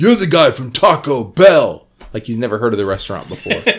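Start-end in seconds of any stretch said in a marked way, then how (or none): 0.0-1.9 high, acted-out accusatory yell. Recalling how a film character shouts a line in a movie you find great, imitating an accusatory yell.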